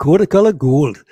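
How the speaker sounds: loud, failed put-on Geordie accent. Trying to say the Geordie phrase after another speaker: failed Geordie accent. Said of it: "You come from Wales, clearly".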